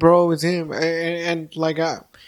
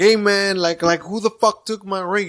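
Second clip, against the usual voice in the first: put-on anger, slower pace; 3 semitones higher than usual. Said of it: "He got real pissed off".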